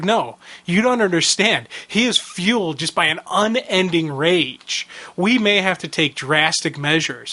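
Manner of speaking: ordinary talk, nothing marked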